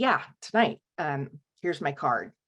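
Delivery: offhand, matter-of-fact, completely nonchalant and casual. Retelling a distressed woman's answer to the front desk clerk: imitating someone completely nonchalant. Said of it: "just completely nonchalantly".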